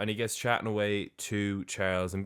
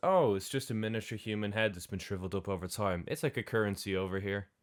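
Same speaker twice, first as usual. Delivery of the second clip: put-on casual, unbothered, offhand tone. Retelling a character's reply about a shrunken head: imitating a nonchalant tone. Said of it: "Flusky kinda just nonchalantly goes".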